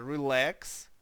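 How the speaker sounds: relax, stress on second syllable -lax. Explaining how the word relax is really read: stress on relax's second syllable. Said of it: "не на перший склад, а на другий у нас наголос".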